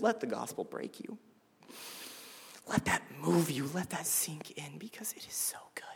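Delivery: soft whisper through tears. Speaking about the gospel to an audience, in a tearful whisper. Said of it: "I'm whispering because my voice is going to fluctuate because I'm crying".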